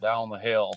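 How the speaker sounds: put-on slight Southern twang. Describing how the bridge guy sounds, the speaker imitates a slight Southern twang. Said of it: "a slight Southern twang".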